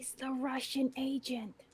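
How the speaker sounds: secretive, high, hushed half-whisper. Moving up to Jack unseen to pass him a secret: half-whispering in character. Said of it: "move around to Jack and whisper".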